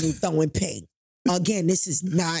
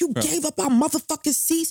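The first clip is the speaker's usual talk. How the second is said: put-on drunken man yelling, higher; 10 semitones higher than usual. Retelling a partner's angry outburst over lost parade seats: imitating a drunk man yelling. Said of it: "he's yelling and screaming at me".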